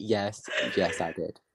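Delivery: very slow, self-assured, confident. Retelling how she answered the question: imitating a very confident reply. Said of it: "she very confidently said".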